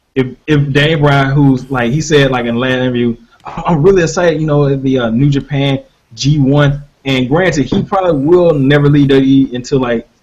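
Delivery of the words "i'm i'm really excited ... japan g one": usual speaking voice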